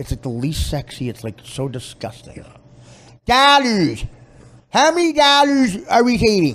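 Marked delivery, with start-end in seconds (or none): 3.2-6.6 very high, swooping, ugly put-on Chicago accent. Right after calling it ugly, the speaker mimics a chicago accent. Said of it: "the Chicago accent is so ugly".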